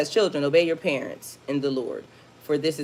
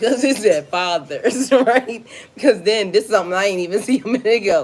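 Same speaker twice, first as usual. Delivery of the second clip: talking through laughter, higher and louder; 5 semitones higher, 6 dB louder than usual. Explaining a Bible verse about fathers, laughing while talking. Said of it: "I know I'm laughing".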